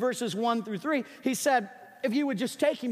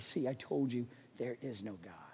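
low, quiet, put-on scornful taunting tone; 11 semitones lower, 11 dB quieter than usual. Speaker acts out a professor speaking to the class, retelling a mocking tone. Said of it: "he would laugh in a very mocking tone and he would say".

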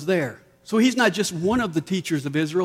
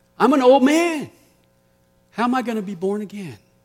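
mock, light touch of scoffing sarcasm; 3 semitones higher than usual. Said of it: "Maybe a little sarcasm there".

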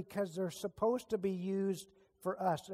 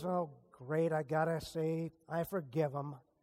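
mock-grudging, put-on reluctance, lower; 4 semitones lower than usual. The speaker demonstrates the wrong heart in forgiving someone, mock-grudging. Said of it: "That's the wrong heart".

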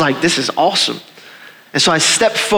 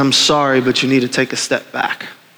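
mock sorrowful voice, lower; 5 semitones lower than usual. Retelling a figure turning you away from a subway train, imitating great sorrow. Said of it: "with great sorrow in the voice".

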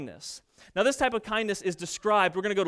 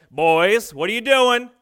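booming, very loud dad-tone yell; 2 semitones higher, 9 dB louder than usual. Parent yells to the boys from the couch, retold in best dad tone. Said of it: "with my best dad tone".

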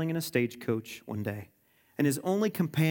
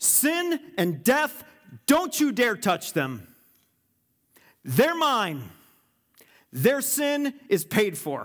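play-acted booming, thundering voice, high and swooping; 7 semitones higher, 4 dB louder than usual. Speaking in a sermon as God, in God's thundering voice. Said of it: "God's thundering voice says".

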